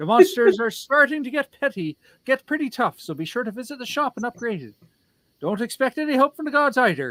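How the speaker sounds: exaggerated, high stage-Irish accent. Speaker talking to chat while playing, in an offensive Irish accent. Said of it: "I'm doing an offensive Irish accent".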